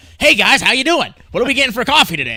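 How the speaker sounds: super-cheerful voice, very high, loud and swooping. Retelling how coffee shop workers greeted customers: imitating overly happy, energized baristas. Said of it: "all happy as fuck".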